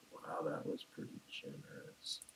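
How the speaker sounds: hushed whisper, under the breath. Speaking in character as healing potions are handed out: muttering under breath. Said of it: "Under my breath".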